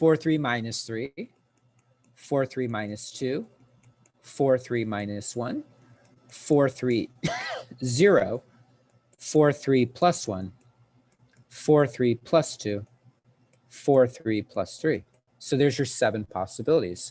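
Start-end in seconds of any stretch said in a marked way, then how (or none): 0.0-15.0 slow, careful, deliberate step-by-step delivery. Explaining orbital values and losing track while counting, speaking slowly. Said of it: "I'm going slow because I'm losing track".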